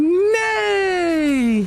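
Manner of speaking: put-on high shouted neigh like a toddler. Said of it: "He goes".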